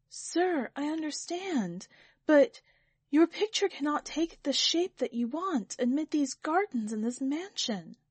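trembling, barely managed out, slightly high voice. The painter, robbed of speech by the sir's wrath, answers him: tremulous voice. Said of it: "in a tremulous voice he managed to say".

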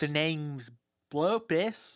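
put-on kid character accent. In a group bit, a player introduces the character Blopus in Blopus's accent. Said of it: "Not you taking his accent".

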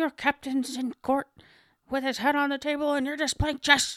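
put-on high cranky old man. Retelling a scene where Spock says chess, answering in a McCoy impression. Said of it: "That's a good McCoy".

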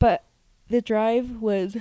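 words stretched through a loud yawn. Speaker describing a long day trip, yawning mid-sentence. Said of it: "I'm yawning".

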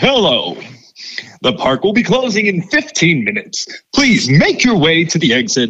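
sing-song PA announcer voice. Speaker recalling making the park's closing announcements, theme park announcer voice. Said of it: "you'd hear me like".

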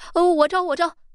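very high, rushed, hurried shout. Held down on a bench before a beating, the accused man gives a hurried shout. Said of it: "急忙喊道".

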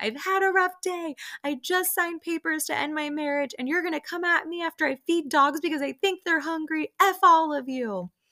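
full-on high, shrill screaming rant. Retell how a woman went back to screaming at the others after a rough day, imitating someone screaming. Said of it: "Lisa goes back to screaming".

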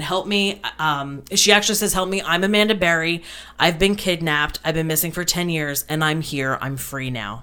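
ordinary delivery

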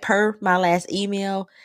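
ordinary delivery

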